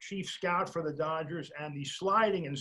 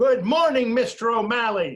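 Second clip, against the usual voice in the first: booming, very loud and high; 6 semitones higher, 12 dB louder than usual. Retelling a greeting called out across camp: imitating a very loud greeting. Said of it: "he said in a very loud voice".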